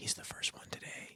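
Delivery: soft, unvoiced whispering. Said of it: "And they were like".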